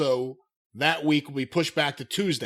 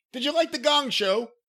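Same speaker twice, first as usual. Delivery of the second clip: fake English accent, higher; 10 semitones higher than usual. Asking another speaker about The Gong Show: put-on English accent. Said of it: "suddenly get a, an English accent".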